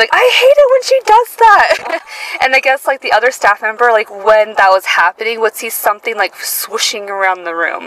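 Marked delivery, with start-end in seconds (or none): 0.1-2.0 exasperated yell, high and loud. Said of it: "she would yell".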